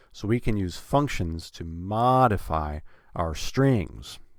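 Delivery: stress on modify. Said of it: "have that a bit higher and, and longer and louder".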